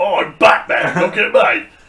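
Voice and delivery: put-on British superhero voice. Joking about a Batman voice: British-accented Batman voice. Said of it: "I might even throw in some British shit there".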